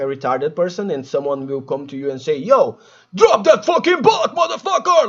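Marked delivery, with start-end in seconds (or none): 2.4-5.1 very high, rising drill-sergeant bark. Describing someone at the gym correcting your push-up form, barking like a drill sergeant. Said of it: "like a drill sergeant".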